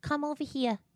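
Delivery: put-on Staten Island accent. Imitating Jaden's strong accent after saying how strong it is: imitating daughter's strong accent. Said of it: "Her accent is so strong".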